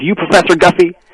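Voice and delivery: put-on heavy backwoods Southern accent. Retelling a strange phone call from an unknown man, in a thick southern accent. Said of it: "a thick Southern accent".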